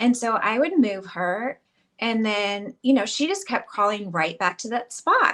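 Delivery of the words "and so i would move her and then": usual speaking voice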